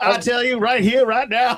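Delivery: high-pitched cartoon rooster voice, Georgia accent. Asked why you made her sound like she was from Georgia, carry on in a Foghorn Leghorn voice. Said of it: "sound like she was from Georgia?".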